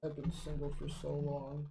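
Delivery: muttering under his breath. Voicing a character who bashfully looks away: mumbling under his breath. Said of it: "he kinda mumbles under his breath".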